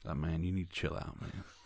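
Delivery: put-on voice, breathy, hushed and soft. Retelling how AP talked to a drunk man, the speaker does a McConaughey impression. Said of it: "he went back to like McConaughey".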